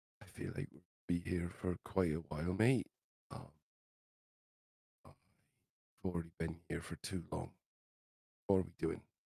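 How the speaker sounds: whispered words. Voicing a character who pulls another close and leans down: whispering. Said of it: "lean down and, and whisper".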